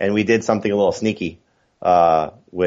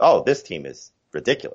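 usual speaking voice

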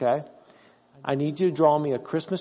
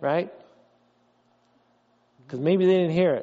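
normal talking voice

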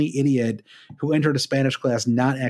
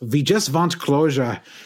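put-on German accent. Retelling a TV scene, quoting the mom, in a German accent. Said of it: "that is the extent of my German accent".

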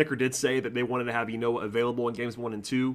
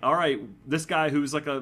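ordinary delivery

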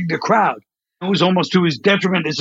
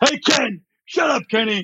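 play-acted, pushy, commanding, belittling tone; 6 semitones higher than usual. Retelling a character bit bossing Ken around: imitating Bossy Boy yelling. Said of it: "start yelling, they're trying to boss Ken around".

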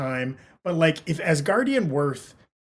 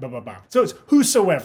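plain

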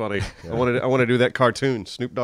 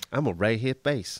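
put-on laid-back celebrity voice, quieter; 4 dB quieter than usual.

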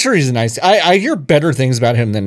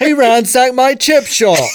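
put-on British accent, pitched very high; 13 semitones higher, 4 dB louder than usual. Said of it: "I love making fun of British accents".

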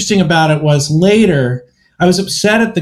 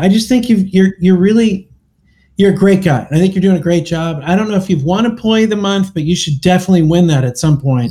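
put-on, ironic, sarcastic tone, laid on thick. Retelling own mocking of a parking attendant: imitating own mocking tone. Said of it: "So I'm just kinda mocking him".

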